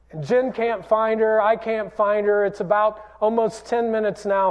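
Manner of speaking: ordinary talk, nothing marked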